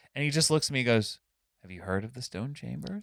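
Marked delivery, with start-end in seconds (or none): 1.7-3.1 very quiet, very soft, hushed voice. Retelling a librarian's question about the Stone Chambers: imitating the librarian speaking quietly. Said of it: "Just real quiet".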